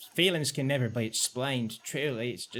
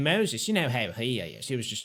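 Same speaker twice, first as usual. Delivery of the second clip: usual speaking voice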